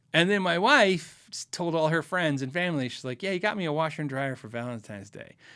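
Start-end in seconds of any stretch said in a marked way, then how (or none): 3.2-5.3 unkind, not nice tone. Retelling how his wife told friends and family about the gift: imitating wife saying it not nicely. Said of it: "she didn't say it very nice".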